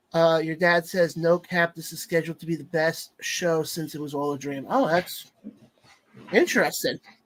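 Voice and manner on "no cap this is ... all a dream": ordinary talk, nothing marked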